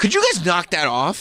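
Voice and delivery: mock rude forced politeness. Acting out how he will ask the guys to stop, in a rude, polite guy voice. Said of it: "put on his rude, polite guy voice".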